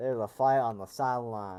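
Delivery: loud, bad put-on rural country accent. Repeating a game line like a country person speaks: bad country accent. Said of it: "That was a bad country accent".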